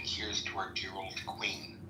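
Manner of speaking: plain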